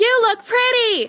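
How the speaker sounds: very high, shrill shouted yell. Voicing a hologram ai asked by a player to yell a compliment: yelling in character. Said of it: "just yell and say I look pretty".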